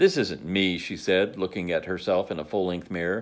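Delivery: plain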